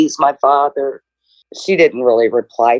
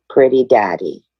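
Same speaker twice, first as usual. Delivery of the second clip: put-on small, childlike little toddler voice; 3 semitones lower than usual. Speaker recounts what he said as a toddler, imitating a little toddler voice. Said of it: "your little toddler voice".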